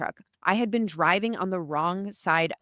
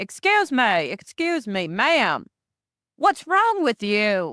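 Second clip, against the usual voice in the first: bad put-on British accent with swooping pitch; 3 semitones higher, 4 dB louder than usual. Retelling what a man said to her as an American tourist, in a terrible British accent. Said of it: "That's a terrible British accent".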